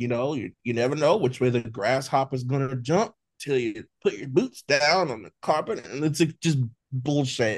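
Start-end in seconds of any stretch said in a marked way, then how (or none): 0.0-5.9 car commercial announcer delivery. Imitating a reality show housemate who talks like Matthew McConaughey: McConaughey-style talk. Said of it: "And he's always like".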